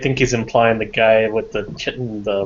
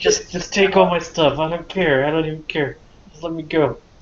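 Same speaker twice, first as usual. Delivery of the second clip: high, cowed, cowering, desperate voice; 7 semitones higher than usual. Voicing the captured man as the players talk of throwing him in: cowering surrender. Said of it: "Then he curls up into a ball and cowers. / And then he sits. / Drone calls [name] over to ask him if these are the bandits that have been robbing him the last few weeks. Very much so. This is [name] B".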